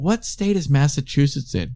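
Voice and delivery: ordinary talk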